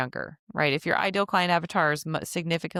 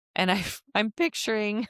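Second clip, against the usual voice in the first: voice breaking and cracking mid-phrase; 4 semitones higher than usual. Giving advice on tone and language, voice cracking. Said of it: "sorry, my voice just cracked".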